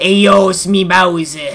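put-on New York accent. Voicing Bowser like a New Yorker, introducing himself: New York accent. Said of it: "make him sound like how he was a New Yorker".

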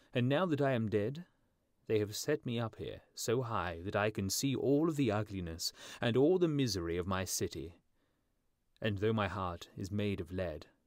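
plain

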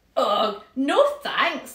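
with a laugh. Turning down a friend's pretend game, he answers, laughing. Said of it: "laughed Sam".

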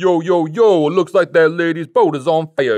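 put-on laid-back hip-hop teen slang drawl, drawn out. Retelling a story, quoting hip-hop teens strolling by, imitating hip-hop teens. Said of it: "hip-hop teens strolled by who were all like".

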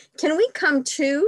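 loud pleading, begging cry, pitched very high. Three young bears, asking to join a picnic, begging. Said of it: "begged Fred".

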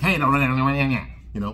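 put-on squeaky, nasally voice. Speaker imitating a talkative man he is describing: squeaky, nasally voice. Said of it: "he's got that squeaky voice, like".

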